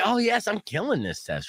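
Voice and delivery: high, cocky, self-congratulating, confident boast. Retelling own thoughts during an eye test: imitating own confident thoughts. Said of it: "So confident".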